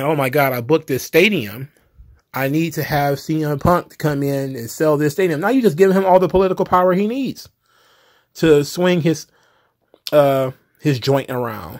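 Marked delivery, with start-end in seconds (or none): none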